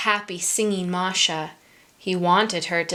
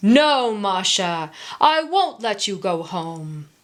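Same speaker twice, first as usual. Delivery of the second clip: growled, flat bear voice. Reading a children's story, the bear answering masha, in a growling bear voice. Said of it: "growled the bear".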